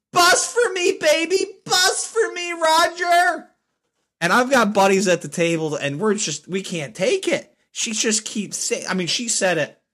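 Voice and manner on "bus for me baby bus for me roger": shrill, very high, drawn-out, acted-out scream. Retelling how a woman kept shouting a phrase, imitating her yelling. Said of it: "not just like saying it loudly".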